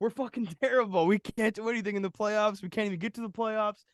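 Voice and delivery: loud, very high, furious ranting. Telling a story about another guy's reaction, imitating a pissed-off guy. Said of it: "this other guy was pissed".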